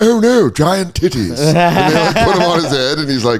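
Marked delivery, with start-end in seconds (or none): 0.0-1.4 put-on voice of an elderly British man. Describing a comedy show, imitating an old British man. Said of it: "an old British dude being like".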